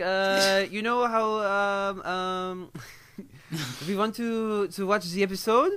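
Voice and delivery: slow, hesitant French-accented English, full of uhs. Showing, when asked, how they spoke English in France: French accent. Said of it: "Speak English with a French accent".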